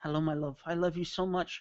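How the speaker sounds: put-on Scottish accent with rolled r's. Speaker shows off the Scottish voice that she likes: Scottish accent. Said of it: "When I bring out the Scottish voice".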